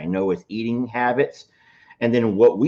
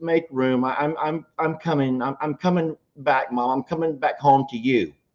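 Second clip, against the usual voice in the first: put-on, tearful, stumbling, high, blubbering sob; 5 semitones higher than usual. Retelling what a daughter told her mother; imitating a daughter crying. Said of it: "her daughter's just crying and she's crying".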